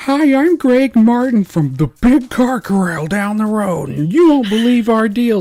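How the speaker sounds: booming, shrill, very loud ad announcer yell. Imitating a car-dealer radio commercial: imitating a yelling commercial announcer. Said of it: "Why are you yelling at me?".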